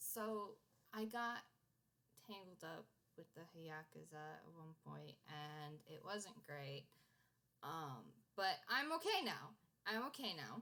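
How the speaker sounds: voice dropped right down, low. Player voicing a character who looks around before speaking, with a dropped voice. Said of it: "like drops his voice and he's like".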